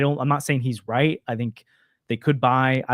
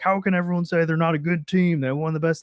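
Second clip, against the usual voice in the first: play-acted, self-mocking, incredulous tone; 3 semitones higher than usual. Retelling what they said last year about the team: mocking own past words. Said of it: "I'm mocking myself right now".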